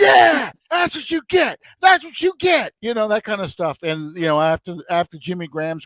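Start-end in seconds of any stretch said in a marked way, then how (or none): 0.0-2.7 mock-screaming, much higher. Retelling watching a football game and pointing at a player, retelling screaming at the TV. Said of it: "screaming at him".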